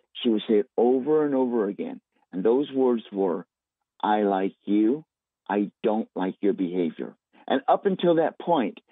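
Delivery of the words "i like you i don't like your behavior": put-on gentle, steady, calm, soothing voice. Retelling a teacher's repeated words to misbehaving kids: imitating Missus Lyons' calm, soothing voice. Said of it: "in a very calm and soothing voice".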